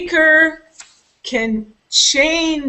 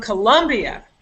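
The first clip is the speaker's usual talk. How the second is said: heavy stress on the word colombia. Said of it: "I can also say it this way".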